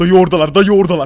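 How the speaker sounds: loud, urgent calling-out voice.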